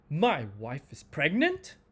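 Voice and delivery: incredulous, disbelieving tone. Demonstrating how intonation shows disbelief, disbelieving.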